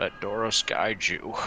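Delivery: muttered under breath. A player character shifts toward a companion while casting guidance: muttered under breath. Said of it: "just kind of under my breath".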